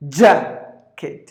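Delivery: "jacket" with stress on first syllable JAC. Teaching pronunciation, the speaker says jacket, stressing JAC in jacket. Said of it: "the first syllable is stressed".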